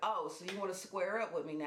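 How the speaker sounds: ordinary delivery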